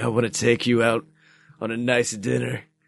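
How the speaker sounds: very deep, low, fast, sultry rumbling voice.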